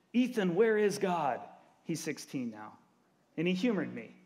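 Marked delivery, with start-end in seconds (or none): 0.1-1.4 mock yell, raised and pitched up. Parent recalls calling out to their son in the kitchen, retelling a yell. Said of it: "I yelled into the kitchen".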